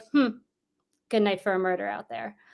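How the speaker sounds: acted, deadpan, sarcastic, dry, offhand delivery. Retelling what the mother would say on a stormy night: imitating mother's dry offhand remark. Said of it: "Very, like, offhandedly, very dry".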